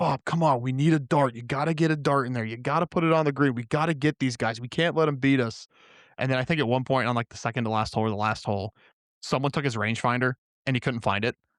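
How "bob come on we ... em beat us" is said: acted, toned-down, mild rallying yell. Retelling a golf match, quoting a teammate motivating Bob: imitating someone yelling. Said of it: "He's trying to yell at Bob".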